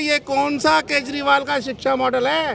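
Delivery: plain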